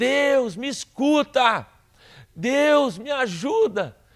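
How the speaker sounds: put-on high, drawn-out shout. Retelling how a drunk beggar on the corner cried out: imitating a man shouting. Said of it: "e o cara gritava".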